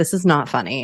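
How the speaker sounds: plain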